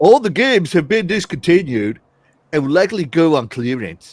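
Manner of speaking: low, loud storybook troll character voice. A host reads aloud a user's quoted post: troll voice. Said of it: "work on my troll voice".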